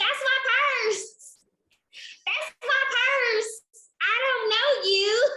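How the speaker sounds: very high-pitched put-on country girl accent. Quoting a girl from an old TV episode, the speaker imitates her: country girl accent. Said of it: "the girl just sounded so country".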